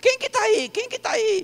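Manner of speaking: put-on high, startled old man.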